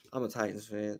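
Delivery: very quiet, very low, soft voice. Retelling answering an employee who asked about his team, saying it softly. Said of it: "I had to say it softly".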